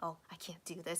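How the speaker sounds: acted whispering. Retelling what he said on a live stream from a taxi: imitating someone whispering. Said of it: "he was trying to, like, whisper".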